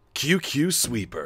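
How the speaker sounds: put-on old-school anime promo announcer voice. Streamer reading a title as narrator, anime commercial announcer voice. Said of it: "like, anime commercial voice".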